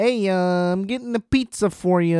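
put-on strong Chicago accent. Retelling a call from the guy bringing a pizza, in a Chicago accent. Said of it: "the most Chicago guy of all time".

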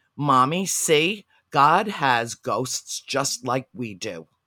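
put-on booming, very loud, slow little-girl outside voice. Retelling a child speaking up in church: imitating a child's loud outside voice. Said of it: "in her big girl outside voice".

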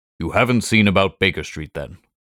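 ordinary delivery, nothing marked

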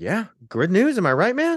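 very high, chipper, churchy cheerful tone. Retelling what an acquaintance said about an earthquake: imitating someone cheery. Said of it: "super, like, cheery about it".

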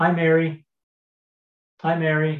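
put-on dead-serious voice. Retelling how a man greeted every girl walking by, imitating a dead-serious greeting. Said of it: "Bill did it real serious".

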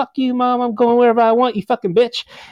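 high, screaming delivery. Retelling a son screaming back at his mom: imitating a son screaming. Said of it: "they were screaming at each other".

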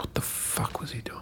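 hushed, whispered mutter under the breath. Retelling what you said to yourself back then, muttered under breath. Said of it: "under my breath".

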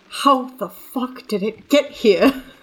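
muttered whisper under the breath. Speaking to Wynn in a scene, whispering under breath. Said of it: "whisper under my breath to Wynn".

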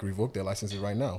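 plain

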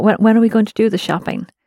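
ordinary delivery

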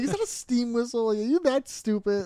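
acted-out scornful, condescending disbelief. Recalling a line from the show: imitating D, condescending "are you an idiot" tone. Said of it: "she says it in such a way of like, "Are you an idiot?"".

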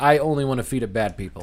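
ordinary delivery

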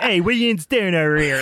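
put-on heavy Pittsburgh accent. Retelling a line from a high school stage role as a cop: super yinzer accent. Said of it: "I just went super yinzer with it".

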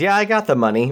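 mock clueless, oblivious, offhand blurted tone. Retelling a line from a movie scene, imitating someone saying it loudly. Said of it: "real loud in a foreign country".

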